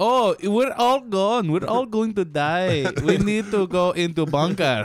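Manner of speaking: terrible, high-pitched, badly put-on Norwegian accent. Imitating a family hiding in a bunker: terrible Norwegian accent. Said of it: "That was a terrible accent".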